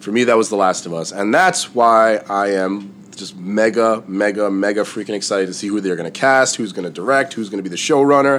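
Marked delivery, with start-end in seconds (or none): none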